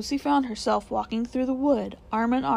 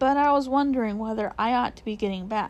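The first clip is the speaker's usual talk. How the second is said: ordinary delivery, nothing marked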